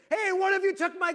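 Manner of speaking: play-acted very high, shrill, loud call. Retelling calling from the bottom of the stairs to the kids; retelling a yell upstairs. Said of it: "Yell up the stairs".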